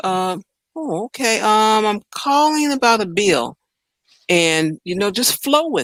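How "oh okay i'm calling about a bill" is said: slow, slightly confused, a little unsure, going along. Showing how to sound when calling a company about a bill, a little confused. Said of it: "You sound a little confused".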